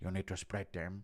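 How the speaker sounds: very deep, soft, low murmur. In a run of impressions, addressing a fellow associate: Francis Ngannou impression. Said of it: "Impression of Francis".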